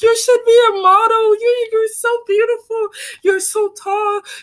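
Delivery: high, loud gushing, adoring voice. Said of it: "And everyone like".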